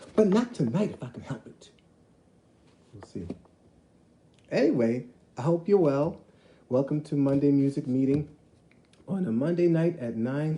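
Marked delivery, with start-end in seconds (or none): 6.7-10.6 cracking, breaking voice. Welcoming listeners to Monday Music Meeting, the host's voice cracking. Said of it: "Did you hear my voice crack?".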